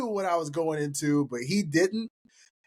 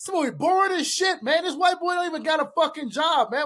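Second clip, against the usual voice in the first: put-on ranting voice, much higher pitch; 9 semitones higher than usual. Retelling how someone went off over the phone during a movie, imitating a rant. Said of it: "he's like going off the phone".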